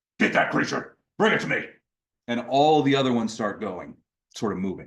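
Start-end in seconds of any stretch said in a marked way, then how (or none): 0.2-1.7 rough, gruff voice. A creature by the body turns and gives orders to the others; gruff voice. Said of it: "kind of turns and says in this sort of gruff voice".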